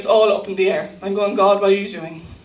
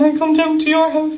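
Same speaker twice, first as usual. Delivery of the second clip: put-on crying, high and tearful; 7 semitones higher, 3 dB louder than usual. Sick speaker recalling phoning their mother: retelling crying on the phone. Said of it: "I'm crying down the phone and I'm saying".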